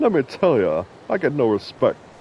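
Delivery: put-on stand-up comic voice, loud, swooping, punchy. Hearing a written line in a comedian's voice, reading it: Rodney Dangerfield voice. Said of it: "I can't read that without hearing that in Rodney Dangerfield's voice".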